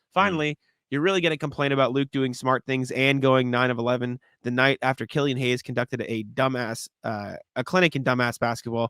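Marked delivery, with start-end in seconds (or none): none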